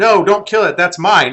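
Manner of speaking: high, loud, panicked shriek. Retelling a game story, the speaker acts out another player screaming: retelling her scream. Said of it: "And she screams".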